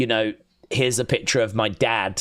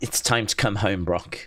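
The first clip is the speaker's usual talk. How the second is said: put-on emotional announcer voice; 3 semitones lower than usual. Retelling a line Michael Cole said on Raw, imitating Michael Cole's emotional delivery. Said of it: "he really tried to make it sound quite emotional".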